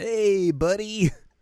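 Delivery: very high, loud, casual and chummy bro voice. Mimic how he sounds about to bro it up with a prince, imitating a casual bro voice. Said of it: "he just sounds like he's about to bro it up".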